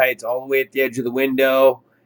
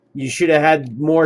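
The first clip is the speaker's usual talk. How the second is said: plain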